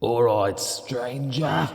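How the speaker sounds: slow, loud, drawn-out announcer voice.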